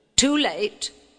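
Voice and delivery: loud, high, harsh croaking fairy voice. Narrator reads the ancient fairy answering the king, croaking harshly. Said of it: "croaked the fairy harshly".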